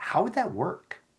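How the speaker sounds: genuinely interested, rising pitch. Demonstrating a non-defensive reply to another person's view: genuinely interested, non-defensive. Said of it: "the inflection in your voice is absolutely essential where you're truly showing interest and non defensiveness".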